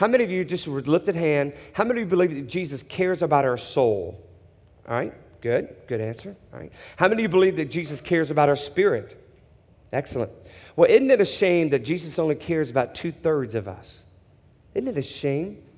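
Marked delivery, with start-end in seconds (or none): none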